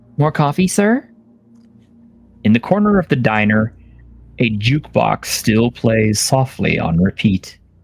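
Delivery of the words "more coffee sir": bright, cheerful, repetitive high robot voice. Voicing an android waitress offering coffee again and again: cheerful looping android voice. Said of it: "in a cheerful, looping voice".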